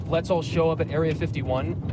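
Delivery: ordinary talk, nothing marked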